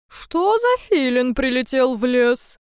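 loud, grumbling owl voice. Reading a tale aloud, voicing the owl who woke at night: grumbling. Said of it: "проворчал он".

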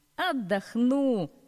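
cheerful and high. A crane answering another crane: cheerful reply. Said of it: "весело ответил другой".

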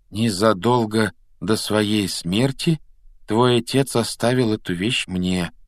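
plain

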